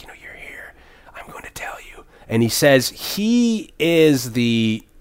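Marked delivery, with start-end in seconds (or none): 0.0-2.0 confiding, hushed whisper, barely voiced, very quiet. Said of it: "And he's whispering".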